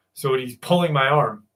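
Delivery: plain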